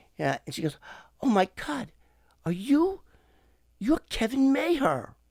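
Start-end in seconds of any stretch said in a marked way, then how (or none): 1.2-5.0 very high, breathy, raised, drawn-out voice. Retelling how a female agent recognized him: imitating a breathy woman. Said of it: "she gets all breathy with me".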